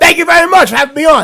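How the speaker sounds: loud, booming, big on-air radio host voice. A radio show guest mimics the host's way of talking, imitating the host's talk. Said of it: "let me talk like that".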